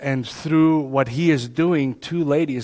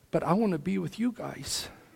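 put-on hushed, crying little girl voice, very soft; 4 semitones higher, 11 dB quieter than usual. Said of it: "And she's just crying".

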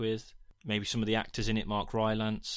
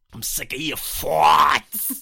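put-on loud, high, belted New York accent; 5 semitones higher, 12 dB louder than usual. Speaker attempts Pattinson's Lighthouse accent but it slips to New York. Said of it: "It's just going to go New York again".

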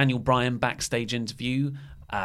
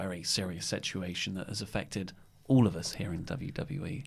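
play-acted grave, solemn, low somber delivery; 6 semitones lower, 11 dB quieter than usual. Mocking a WWE announcement about a very serious situation, in a put-on somber voice. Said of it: "they do the somber voice".

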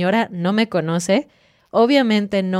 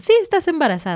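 mock casual, offhand, matter-of-fact, pitched up; 8 semitones higher than usual. Retelling how the woman doing the ultrasound told her, imitating a matter-of-fact tone. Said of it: "Así como, si fuera lo, lo más fácil".

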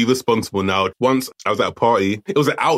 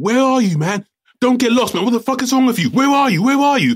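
put-on shrill, high-pitched shouting; 12 semitones higher, 3 dB louder than usual. Retelling phoning his girlfriend after she disappeared at a party, re-enacting a shout on the phone. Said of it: "I'm shouting on the phone".

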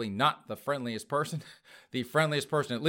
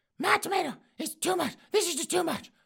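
put-on furious, shrill, very high angry yell. Retelling a story, the speaker voices an old woman complaining to a Burger King worker: acting out a yelling customer.

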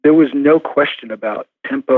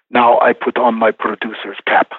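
put-on plain Turkish-accented speech; 3 semitones lower than usual. Quoting what he always said when it was time to listen to him, in a Turkish accent. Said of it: "he would always say in his Turkish accent".

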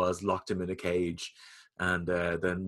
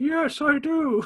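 put-on side-of-mouth speech, higher and louder; 5 dB louder than usual. Retelling a wrestling wedding moment: imitating talking out of the side of the mouth. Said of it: "out of the side of his mouth".

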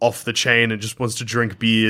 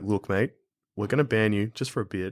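put-on whisper, quieter; 6 dB quieter than usual. Imitating Eddie telling a player he'll be banned: whispering as Eddie. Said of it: "Eddie had a whisper to him".

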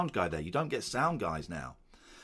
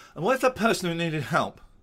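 very posh put-on accent, raised voice; 8 semitones higher, 7 dB louder than usual. Recalling having to learn written bits, redoing own delivery; very posh voice. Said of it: "Very posh".

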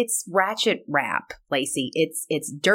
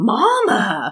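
put-on small child's Southern accent, high and loud; 5 semitones higher, 5 dB louder than usual. Retelling a child popping up to shout in a little southern accent. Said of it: "in his little southern accent goes".

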